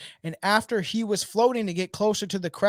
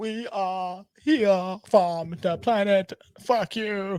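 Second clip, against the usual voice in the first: slow speech, like carefully learned human speech. Imitating how an alien in Galaxy Quest talks: Galaxy Quest alien voice. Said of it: "Great job".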